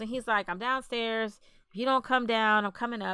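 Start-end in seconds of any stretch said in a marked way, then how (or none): none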